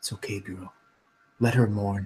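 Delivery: hushed, soft, close stage half-whisper. Lily's mother hugs her from the side and half-whispers in her ear. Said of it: "She whispers in your ear".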